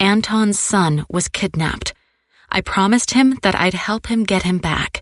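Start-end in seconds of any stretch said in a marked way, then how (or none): none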